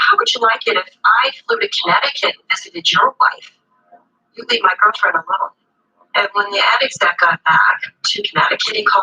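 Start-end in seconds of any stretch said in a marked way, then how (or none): 0.0-5.5 put-on heavy, laid-on New York accent, pitched up. Speaker retells a caller threatening an ad exec: thick New York accent. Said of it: "same thick New York accent".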